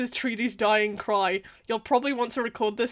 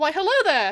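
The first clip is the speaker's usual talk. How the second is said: regular voice, higher and more energetic; 6 semitones higher, 4 dB louder than usual. Demonstrating a second voice beside the regular one: higher, more energetic. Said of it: "my treaty voice is kind of like higher pitched. I go up a little bit".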